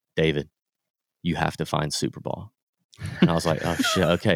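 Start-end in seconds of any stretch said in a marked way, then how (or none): 0.2-2.5 acted dead-serious deadpan, low and flat. Telling a golf story, quoting his reply after the ball went into the creek, retelling a dead-serious deadpan. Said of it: "like dead serious, deadpan".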